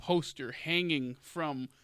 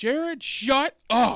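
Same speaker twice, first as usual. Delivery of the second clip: very high, very loud, shrill, blasting yell; 10 semitones higher, 10 dB louder than usual. Retelling how a friend in the car snapped at him: imitating someone yelling. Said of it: "He just yelled at me like".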